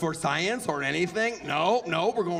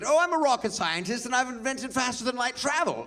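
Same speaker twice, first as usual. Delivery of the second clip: high put-on English accent, for show; 6 semitones higher than usual. Speaker mocking how people believe someone with an english accent, english accent. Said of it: "Someone with an English accent".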